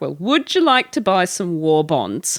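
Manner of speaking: animated character voice with swooping pitch. Acting out a phone sketch in which the future calls a man: voicing the future. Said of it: "the future is like".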